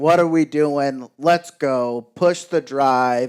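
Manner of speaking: easy, light, mild hollering. Retelling how a brother on a ridge started yelling: imitating brother yelling. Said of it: "he just starts yelling".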